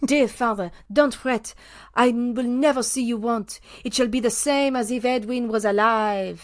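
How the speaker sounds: put-on French accent. Reading an account aloud, the speaker voices a daughter comforting her father in a french accent. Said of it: "I'll do it in a French accent".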